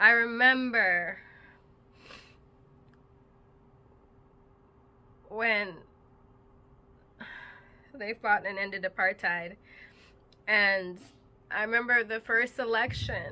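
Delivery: voice breaking with held-back crying, near tears. Remembering watching the first south african election, on the verge of crying. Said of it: "I'm gonna probably start crying right now".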